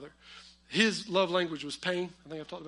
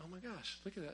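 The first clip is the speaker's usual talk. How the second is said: very soft, hushed aside. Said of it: "I was like".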